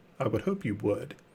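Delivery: mock smug, condescending tone. Speaker acts out a figure looking down at everybody: mock-smug. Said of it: "smugly looks down at everybody and says".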